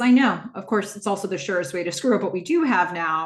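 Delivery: ordinary talk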